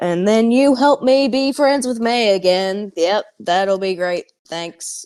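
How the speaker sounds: comes off a touch sarcastic. A player, in character, agrees to the deal and says thanks: sort of sarcastic. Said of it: "comes off as sort of sarcastic".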